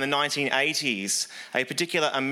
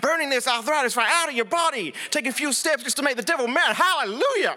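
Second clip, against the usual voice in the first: terrible, very high bad American accent; 11 semitones higher than usual. Retelling a man laying his hands on a woman; worst American accent. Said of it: "in my worst American accent".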